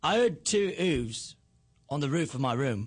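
low-pitched, fake British accent. In a blind accent test, each person says the set sentence: put-on british accent. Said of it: "can you do your British accent".

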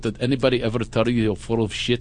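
put-on Russian accent, female-sounding. Speaker retells a woman's recurring joke to him, in a Russian accent. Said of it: "she's a Russian accent".

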